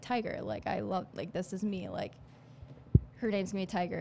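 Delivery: ordinary delivery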